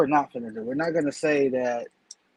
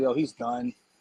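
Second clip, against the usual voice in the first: checked-out, over-it, fed-up, done tone; 2 semitones lower, 4 dB quieter than usual. Imitating a Raiders player's locker room interview tone: imitating a fed-up, done tone. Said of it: "you know the tone of voice I'm talking about".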